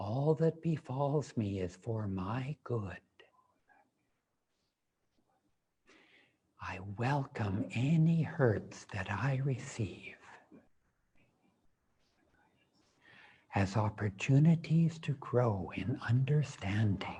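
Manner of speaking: hushed, soft whisper on every word. Leading a repeated affirmation, saying it again in a whisper. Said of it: "And now in a whisper".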